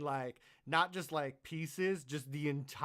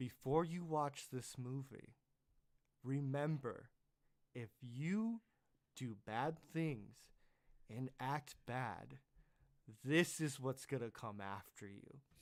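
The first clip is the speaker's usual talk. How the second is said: mock grave, soft, utterly dead-serious tone; 6 dB quieter than usual. Speaker retells mom's warning to the kids before a movie, imitating mom's serious voice. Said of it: "she looks at us with the most serious voice".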